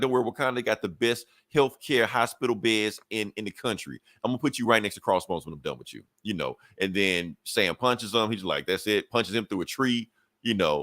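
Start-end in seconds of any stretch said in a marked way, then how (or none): 0.0-6.0 taunting, goading tone. Recapping a fight scene, the speaker voices T'Challa taunting Sam, imitating trash talk. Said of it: "T'Challa talking the whole shit the whole time".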